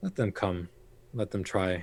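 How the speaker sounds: hushed half-whisper, muttered under the breath. Voicing a figure who hears of a planned attack: half-whispering to himself. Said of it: "whispers to himself almost in, in Eremite".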